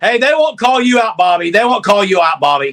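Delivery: loud, full-tilt, sports-talk style yelling. Debating Texas's chances against Michigan with Bobby, yelling. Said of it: "Sorry, I'm yelling".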